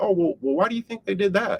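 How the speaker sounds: guileless, innocent tone, slightly high. Showing listeners the tone to use when asking people a question: innocent tone. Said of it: "with that tone of voice that I use".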